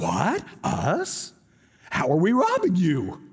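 cartoon dog voice, swooping, slow and stretched out. Retelling Malachi, the speaker voices the people answering God: Scooby-Doo voice. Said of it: "That's my Scooby-Doo voice".

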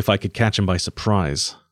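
usual speaking voice

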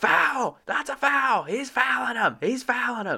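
shrill, very high-pitched shouting. Speaker retells watching a game with a brother-in-law: retelling a yell at the TV. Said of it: "I'm yelling at the TV".

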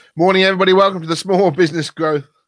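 very high and loud, talking through a mouthful. Opening a live small business support group show, talking with mouth full. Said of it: "I've got a mouthful of biscuit".

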